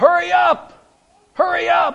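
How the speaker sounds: very loud, very high, shrill drawn-out yell at full stretch. Retelling a man in a drive-thru line: imitating a man yelling. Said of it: "he was yelling and screaming".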